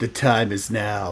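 slow, drawn-out delivery. Imagining a talking bust that says short lines: Nicolas Cage voice. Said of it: "a bust of Nicolas Cage, and he just says stuff like".

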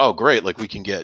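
usual speaking voice

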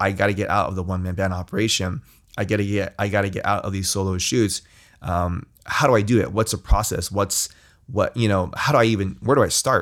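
ordinary delivery

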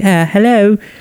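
very high, put-on British accent. Retelling a scene from a british show: put-on british accent. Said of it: "it's a British show, right? So she's like".

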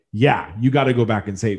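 ordinary talk, nothing marked

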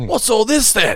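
very high, drawn-out, pissed-off, annoyed tone. Showing the phrase in one context, as if pissed off: annoyed, angry tone. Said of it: "You'd be pissed off".

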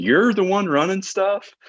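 high, slow, surprised disbelief. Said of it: "So they're like".

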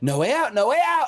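very high, maniacal cackling scream. Voicing a storm creature pelting the party with things: laughing maniacally. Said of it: "laughing maniacally as it does it".

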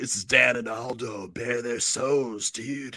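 put-on stoner voice impression. Doing a show intro when asked for that voice: Sean Penn stoner impression. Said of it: "with that voice".

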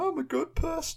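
very high, drawn-in, whiny voice. Retelling how a man who makes television responded when confronted: imitating someone whining. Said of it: "And then he's like whining".

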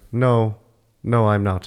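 very slow, spare, each word drawn out. Acting out a movie scene's reply: Paul Bettany voice. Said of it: "that's a really good Paul Bettany voice".

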